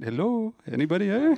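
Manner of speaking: put-on loud, high-pitched call in a French accent. Retelling a voice heard from a video screen in the office: french accent. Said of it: "in their French accent".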